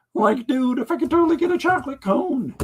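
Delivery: high-pitched cartoon character voice. Ordering ice cream while his kids try not to laugh: Shaggy voice. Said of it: "I ordered us ice cream as Shaggy".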